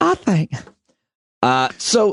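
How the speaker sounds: odd put-on Michigan accent, high and slow. Playing a made-up caller named Barbara in Michigan: weird Michigan accent. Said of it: "What a weird Michigan accent that was".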